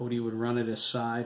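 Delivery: ordinary delivery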